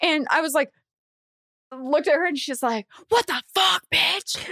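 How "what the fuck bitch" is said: raspy, high, rough, hostile screaming. Retelling how a driver who almost hit them screamed at them, imitating screaming. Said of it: "Starts screaming at me".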